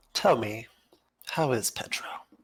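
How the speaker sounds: gently spoken, soft and quiet. Linnea, meeting Nemia, asks after Petro, soft-spoken. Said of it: "She seems soft spoken in the way she speaks".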